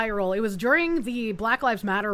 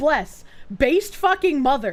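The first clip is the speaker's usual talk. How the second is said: usual speaking voice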